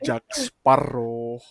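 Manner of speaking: put-on Spanish-accented delivery. Recalling a favorite movie villain's line: Javier Bardem impression. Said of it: "I like the way he says".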